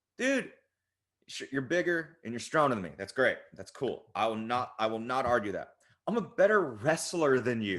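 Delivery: ordinary talk, nothing marked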